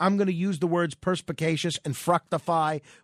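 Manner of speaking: plain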